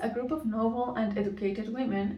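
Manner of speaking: usual speaking voice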